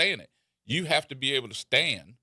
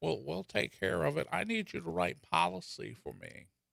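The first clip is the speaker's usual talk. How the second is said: rough, creaky, raspy, pitched-up put-on character voice; 5 semitones higher, 7 dB quieter than usual. Imitating Mama Bear, who handles trouble for others: impression of Mama Bear. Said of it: "I thought it was a good impression".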